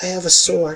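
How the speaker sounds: soft, timid, meek little voice. A player voices their character Alt Teresa in a group scene: Alt Teresa's meek quiet voice. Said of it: "just in a meek, kind of quiet voice".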